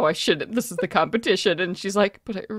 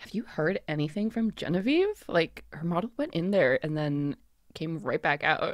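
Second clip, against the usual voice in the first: hushed, dropped, very soft voice; 3 semitones lower, 10 dB quieter than usual. Voicing a character asking another about a tense colleague: lowered voice. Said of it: "lowers her voice".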